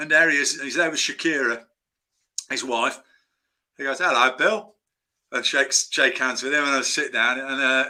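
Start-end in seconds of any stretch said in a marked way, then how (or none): 4.0-4.7 put-on London-accented film star voice. Retelling meeting a famous actor in a restaurant: Michael Caine impression. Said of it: "do my Michael Caine impression".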